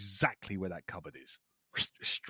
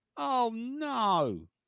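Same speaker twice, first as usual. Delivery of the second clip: put-on, very high, strained, alarmed, stressed, long "no"; 4 dB louder than usual. Speaker retells what Carol said, imitating Carol's stressed voice. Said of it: "you can hear the sort of stress in the voice".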